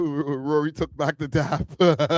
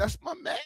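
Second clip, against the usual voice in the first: hushed, very quiet, trembling whisper; 10 dB quieter than usual. Analyzing a man's voice, the speaker is imitating his trembling voice. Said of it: "He kind of just said it like with a tremble voice".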